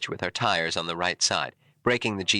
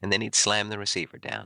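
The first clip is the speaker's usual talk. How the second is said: ordinary talk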